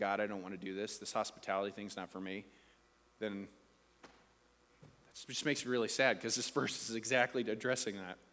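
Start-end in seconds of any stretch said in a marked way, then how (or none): 0.0-2.4 low, soft, fast grumble under the breath. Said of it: "grumbling under your breath saying".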